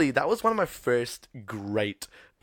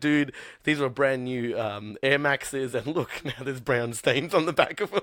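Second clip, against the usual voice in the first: ordinary delivery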